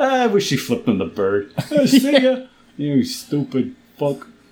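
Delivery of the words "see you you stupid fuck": slow, put-on New York accent. Performing a movie character's line in a new york accent. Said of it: "had a New York accent and swore".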